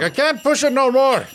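very high-pitched put-on sci-fi character voice. Describing how a performer sounded: Scotty from Star Trek voice. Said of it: "he sounds like Scotty on Star Trek".

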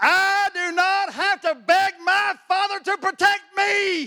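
put-on preacher's full shout, pitched very high. Telling listeners what he shouted at others, shouting it at them now. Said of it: "just like I'm going to shout it to you".

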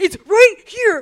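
mock very high, very loud, shrill, enraged yell. Speaker retells a man marching up to them, imitating him furious. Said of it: "fucking furious. He's like".

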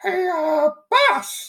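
very high, squeaky cartoon mouse voice.

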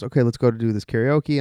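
ordinary talk

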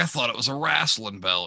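put-on thick West Virginia accent. Retelling a man's mix-up about a wrestling belt, the speaker imitates his thick West Virginia accent. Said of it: "he has a real thick West Virginia accent".

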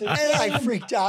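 high-pitched, slow speech through laughter.

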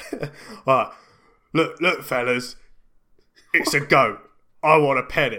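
loud, heavy put-on English accent. Attempting a quick bit in a Jason Statham accent. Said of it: "That's my Statham accent".

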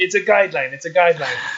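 halting broken English, insistent and repeating. Retelling a roommate's question: imitating roommate's broken English. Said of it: "in his broken English".

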